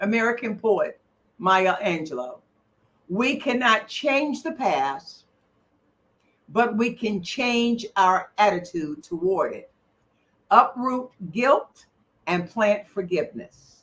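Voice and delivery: reading slowly and deliberately. Rereading a quoted passage for listeners: reading slowly. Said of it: "let me just read that slow again".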